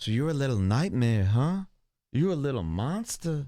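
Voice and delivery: mock flirtatious voice of a flirty man. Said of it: "Somebody's getting flirtatious".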